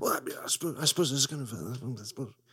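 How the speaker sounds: stuttering and sputtering throughout. Doing an impression of Hugh Grant talking about himself: Hugh Grant impression. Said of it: "That's my Hugh Grant impression in which he just sputters out".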